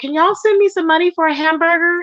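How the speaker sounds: play-acted, weepy, high-pitched crying with desperate tone. Retelling what a woman said while crying, imitating her crying and begging. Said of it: "she was literally crying, saying".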